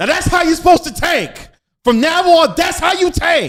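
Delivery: shrill, booming, very loud, high-pitched celebrity voice. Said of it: "let me try to do it in the [name] voice".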